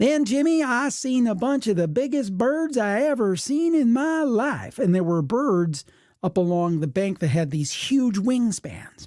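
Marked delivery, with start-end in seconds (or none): 0.0-4.8 put-on West Virginia accent, pitched up. Retelling what mom said to dad as they drove down a dirt road, imitating her West Virginia accent. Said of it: "in her West Virginia accent".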